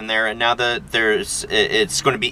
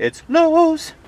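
very high-pitched, loud voice; 5 dB louder than usual. Standing in a lowe's, naming the store in a high-pitched voice. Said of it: "you have to get high pitched with your voice like that".

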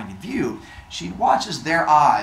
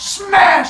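imitated furious yell, higher and louder; 9 dB louder than usual. Retelling how Athena beats Arachne with her loom: imitating Athena yelling. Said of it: "is just yelling at her".

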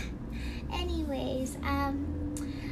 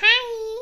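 childish put-on squeaky voice, high and very loud; 9 semitones higher, 12 dB louder than usual. Demonstrating a put-on high-pitched voice on a greeting. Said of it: "Putting on the high-pitched voice like this".

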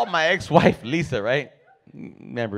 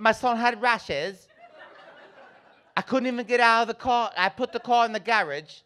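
put-on English accent, pitched very high; 9 semitones higher than usual. Imitating a woman who grew up here but moved to England, English accent. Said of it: "Now she talks like this".

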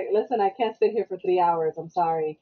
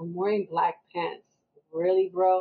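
plain

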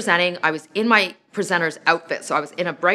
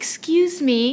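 put-on sweet, tiny little-girl voice, very high; 10 semitones higher than usual. Retelling a little girl speaking up after airport security: imitating a sweet little voice. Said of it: "heard a little voice say to me in a really sweet way".

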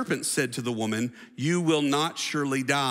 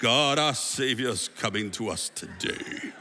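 put-on English accent, showy preacher style; 2 semitones lower than usual. Mocking a man who prays for show, in a fake English accent. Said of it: "When did you get an English accent?".

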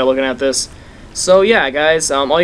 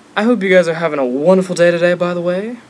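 fancy, refined, elegant little put-on voice; 3 semitones higher than usual. Waiting on a loading screen in a game, put-on elegant voice. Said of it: "I said that in a nice little elegant voice".

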